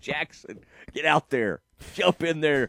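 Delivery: ordinary delivery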